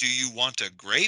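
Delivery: grape said with rising pitch at the end.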